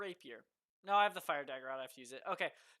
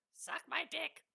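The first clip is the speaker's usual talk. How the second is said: very high, hushed whisper; 10 semitones higher than usual. In a tabletop game, a player speaks as Floof, whispering. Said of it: "Floof's just gonna whisper".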